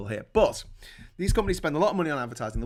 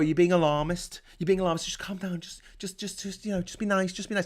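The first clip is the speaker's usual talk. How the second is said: put-on speaking down, condescending, soothing as to a dim child; 5 semitones higher than usual. Imitating people who dismiss warnings, as if talking to a child. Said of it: "Like we're talking to a child".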